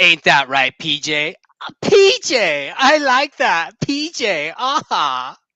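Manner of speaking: very loud, swooping, animated cartoon voice. Giving a Disney movie quote for others to guess; cartoon character voice. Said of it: "I'm gonna try and do the best voice I can".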